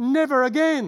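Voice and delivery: scream through clenched teeth. Husband recalling his wife giving birth, retelling a scream through clenched teeth. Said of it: "screaming the words, never again, through clenched teeth".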